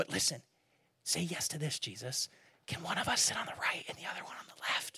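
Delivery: secretive, quiet, breathy whisper. Retelling the disciples pulling Jesus aside to ask a private favor, whispering. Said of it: "And I'm whispering for a reason".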